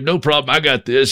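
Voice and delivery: plain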